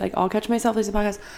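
talking way too fast, rattled off.

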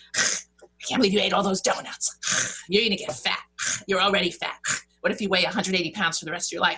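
put-on nasty, critical-sounding voice. Telling the story from her keynotes, voicing her inner critic: imitating Slash's nasty voice. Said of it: "the nasty voice who I deem Slash said".

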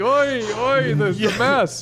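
very high, very slow, drawn-out voice.

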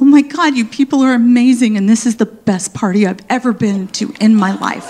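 tearful, gushing, crying through every word. Retelling a mother's tearful speech at a party: imitating mom crying. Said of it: "as she cries".

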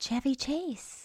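soft whisper under the breath. Speaker dropping a name in conversation, whispering. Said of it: "and I'm whispering".

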